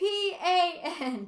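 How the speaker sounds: offended outcry. Reading a novel aloud, a character spelling out a name, indignant cry. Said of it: "He cried indignantly".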